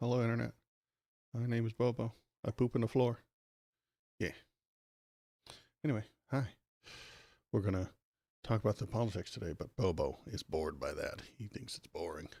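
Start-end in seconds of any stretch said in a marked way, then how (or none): 0.0-3.2 put-on baby puppy character voice. Introducing the puppy Bobo to the Internet, speaking as him: Bobo puppy voice. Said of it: "Say hello, Bobo".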